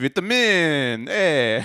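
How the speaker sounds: loud, high put-on Italian accent on both words. Joking around with another speaker, saying a word in an italian accent. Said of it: "I'm saying it with my Italian accent".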